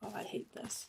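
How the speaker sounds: soft, nervous whisper.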